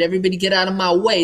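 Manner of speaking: trumpet-like, brassy big-city New York accent. Explaining how people from new york talk, demonstrating: trumpet-like new york accent. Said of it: "it's like a trumpet".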